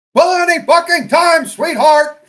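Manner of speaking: shrill, very loud, high drill-sergeant yell. Showing the others your best impression, do an R. Lee Ermey drill sergeant impression. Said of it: "my best drill sergeant Arlie Ermy impression".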